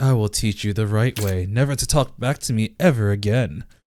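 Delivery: put-on creepy voice. Imitating a character who threatens to re-educate his sister: imitating a creepy voice. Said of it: "he's so creepy".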